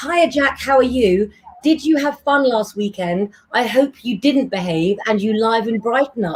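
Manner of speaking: normal talking voice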